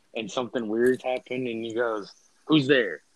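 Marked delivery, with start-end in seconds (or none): 2.4-2.9 sudden, loud, startled call-out. Acting out hearing something while alone in a room: imitating a startled voice. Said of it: "that's how you know you're startled".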